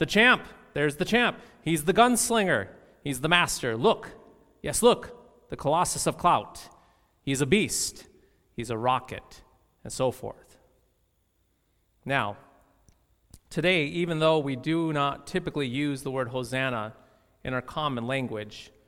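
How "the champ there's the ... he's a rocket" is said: ordinary talk, nothing marked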